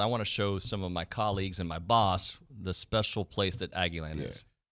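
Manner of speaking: usual speaking voice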